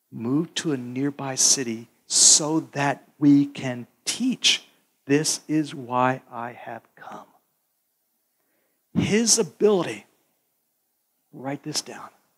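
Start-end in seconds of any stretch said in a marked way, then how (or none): 0.2-7.3 put-on whisper, lower. Retelling the Father's words to Jesus, imitating the Father whispering. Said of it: "the Father whispers to him and says".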